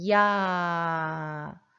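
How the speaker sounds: 야 held long, vowel stretched. Pronunciation lesson on diphthongs, sounding 야 out: long drawn-out 야. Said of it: "야를 길게 한번 발음해 볼게요".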